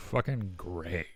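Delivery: jealous, edgy bite landing on one word. Imitating Sam saying the word Greg: imitating Sam's edge on Greg. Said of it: "there is an edge on that word".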